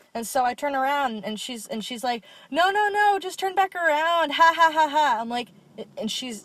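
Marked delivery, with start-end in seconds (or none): 2.5-5.2 mock loud laughing, higher and louder. Retelling someone in class laughing uncontrollably: imitating loud laughing. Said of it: "she's so loud".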